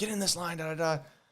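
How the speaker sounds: put-on high-pitched yelling coach voice. Retelling the strength coach at the first practice: imitating the strength coach yelling.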